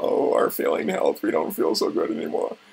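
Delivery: sickly, creaky, ailing voice. Imitating people talking about their failing health: impression of them complaining. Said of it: "that was a pretty good impression".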